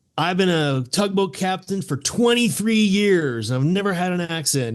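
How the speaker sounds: put-on, high, drunken bar-room yell. Retelling what a tugboat captain said in a bar, imitating Captain Clark yelling. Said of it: "He was like yelling".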